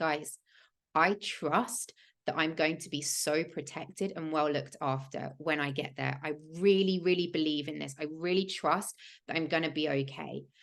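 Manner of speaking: normal talking voice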